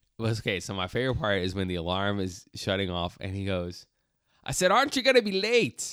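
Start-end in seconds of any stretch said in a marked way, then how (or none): 4.5-6.0 put-on very high, loud, thick, overdone Scottish accent. Retelling a favorite movie scene, quoting a character: imitating a scottish accent. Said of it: "that was too Scottish or whatever".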